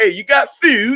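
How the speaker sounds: put-on British gangster accent. Talking about UK gangsters calling drugs food, a speaker quotes one; British gangster accent. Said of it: "He's like".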